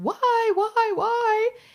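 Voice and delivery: anguished, very high, loud wailing scream. Describing a woman at a casket during a funeral, the speaker imitates a wailing scream. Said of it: "screaming like".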